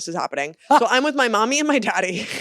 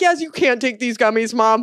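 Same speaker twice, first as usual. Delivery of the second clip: put-on teary, tearful voice; 3 semitones higher than usual. Retelling telling parents about accidentally being high: imitating own tearful plea. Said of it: "tears in my eyes".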